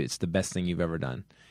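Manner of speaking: plain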